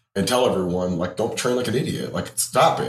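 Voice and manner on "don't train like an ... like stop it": plain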